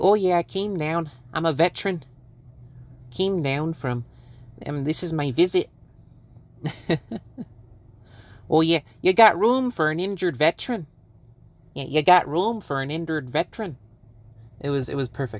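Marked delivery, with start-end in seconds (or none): 0.0-13.8 put-on sort of upper Midwest Minnesota-Wisconsin accent. Retelling a man heard today: Minnesota-Wisconsin accent. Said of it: "a sort of like Minnesota, Wis- Wisconsin accent".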